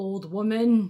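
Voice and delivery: ominous, menacing voice. Recapping a scene where Bubba walks toward May, doing Bubba's put-on ominous voice. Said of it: "in his ominous voice".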